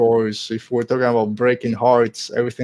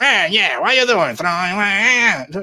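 overly gruff, high voice with stretched long "ah"; 8 semitones higher than usual. Complaining about an audiobook voice choice: imitating Marc Thompson's too-gruff voice. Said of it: "a little too gruff".

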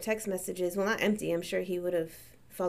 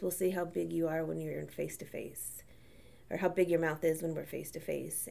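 put-on very calm voice, much quieter; 2 semitones lower, 5 dB quieter than usual. Retelling what a man said to him over a mutual friend's remark: imitating a very calm voice. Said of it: "He just simply said in the calmest voice".

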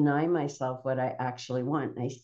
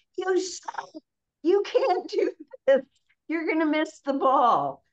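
put-on very high, shrill, bawling yell; 13 semitones higher, 4 dB louder than usual. Acting out a parent at a kid's baseball game: imitating a parent yelling.

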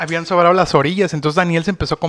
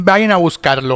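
play-acted, firm, authoritative voice, spoken clearly. Speaker quotes his wife's reply to him and his friends, retelling an authoritative tone. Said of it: "claramente y con un tono de autoridad".

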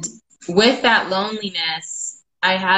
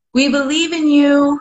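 put-on small, high, raised childlike voices cheering; 8 semitones higher, 5 dB louder than usual. Retelling nephews cheering over the phone: imitating kids' little voices. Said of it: "I start hearing their little voices".

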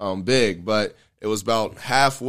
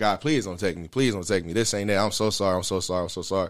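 imitated pleading voice; 3 dB quieter than usual. Retelling a desperate moment, imitating own past pleading to God. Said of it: "I'm pleading to God".

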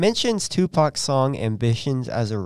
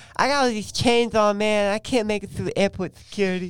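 put-on lisp, much higher; 8 semitones higher than usual. Speaker retelling a man's remark for listeners, imitating his lisp. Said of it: "And he has a lisp".

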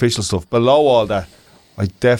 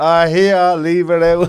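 put-on high, very slow, very drawn-out Dublin accent; 7 semitones higher than usual. Quoting what Martin says in a Dublin accent: imitating Martin's Dublin accent. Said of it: "a Ballymun or a Dublin accent".

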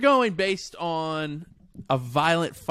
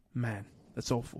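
put-on man's muttering, lower and quieter; 6 semitones lower, 12 dB quieter than usual. Describing a man handed a plate, imitating him muttering under his breath. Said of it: "he will say a lot of things under his breath".

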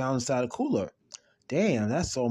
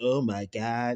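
put-on feminine-sounding voice. Retelling a man's reaction on opening a cooler: imitating a feminine voice. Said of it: "he said it in a feminine voice".

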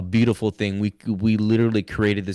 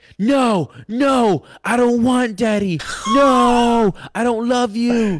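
put-on very high, loud toddler cry-yelling; 6 dB louder than usual. A dad retells how his little girl reacts when he walks in, imitating a child cry-yelling. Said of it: "Cry yelling".

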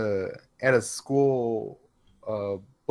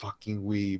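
hushed, close, low half-whisper under the breath; 5 semitones lower, 8 dB quieter than usual. Retelling how a coworker at work leaned closer: imitating someone half-whispering. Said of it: "he gets closer to me and he whispers".

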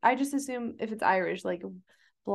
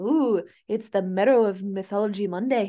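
loud, raised, off-the-cuff Irish accent; 5 dB louder than usual. Asked to try an accent off the cuff, introduce mythology monday in an irish accent. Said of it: "I can do Irish".

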